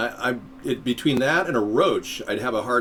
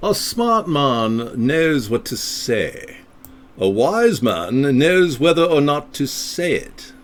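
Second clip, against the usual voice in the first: loud, very slow, deliberate English accent; 3 semitones higher, 6 dB louder than usual. Reading a quote aloud after being asked to, in english accent. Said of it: "Read this in your English voice".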